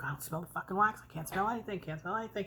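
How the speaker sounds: play-acted angry, irritated, pissed-off griping rant. Retelling how someone complained he couldn't smell the wax: imitating someone pissed off. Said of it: "all pissed off".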